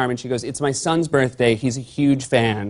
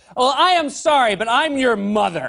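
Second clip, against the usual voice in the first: mock very high, loud, deliberate, drawn-out delivery; 11 semitones higher than usual. Retelling what a mother said to her son in a restaurant, retelling a loud remark. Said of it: "she said it very loudly for the whole restaurant to hear".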